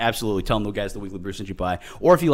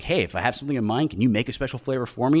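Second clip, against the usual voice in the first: ordinary delivery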